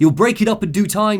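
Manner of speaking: bad, generic English accent, pitched very high. Reading a character's quoted audio log in a crappy generic english accent. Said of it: "Generic, middling, crappy English".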